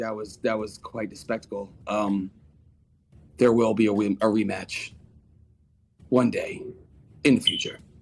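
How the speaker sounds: leaning-in, in-character stage whisper. Voicing a character who leans close to another's ear, whispering in character. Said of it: "I'm gonna do whispering like".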